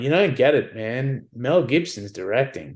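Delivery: plain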